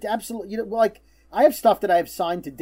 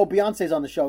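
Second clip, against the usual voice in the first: ordinary talk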